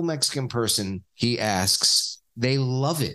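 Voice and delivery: normal talking voice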